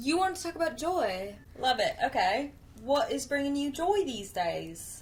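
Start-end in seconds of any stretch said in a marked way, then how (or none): 2.8-5.0 put-on British accent. Asking the other speaker what brings them joy: british accent. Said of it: "Why do I always say it in a British accent?".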